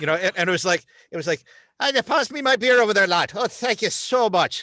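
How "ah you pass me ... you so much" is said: exaggerated Hollywood stage Irish accent, pitched up. Describing Hollywood's Irish characters, the speaker mimics them in a Hollywood Irish accent. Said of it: "then you had Hollywood Irish".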